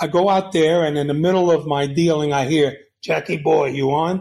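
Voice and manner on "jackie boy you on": very raspy, hard, loud calling voice. Retelling a call heard on a radio: raspy Robert Loggia type voice. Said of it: "very raspy, Robin Loggia type voice".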